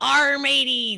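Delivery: shrill, very high, loud shouted yell. Playing a ship captain yelling orders at the crew: in-character yelling. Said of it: "yelling, and I'm like".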